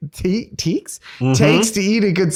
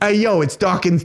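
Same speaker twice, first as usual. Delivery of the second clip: put-on Brooklyn accent. Imagining Richard Dawkins answering the phone, Dawkins with a Brooklyn accent. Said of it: "What if he had like a Brooklyn accent?".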